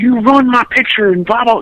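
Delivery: high, furious, acted-out yell, flipping out. Retelling an angry fan whose autograph picture was ruined: imitating someone screaming. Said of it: "he's screaming so loud".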